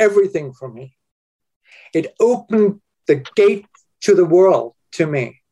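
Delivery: tearful, choked with emotion. Answering how reading has impacted your life, tearing up. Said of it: "I'm tearing up now".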